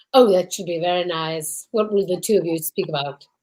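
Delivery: low, deep film-villain voice. Playing Hannibal Lecter to the other's Clarice: Hannibal Lecter voice. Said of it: "Hannibal Lecter".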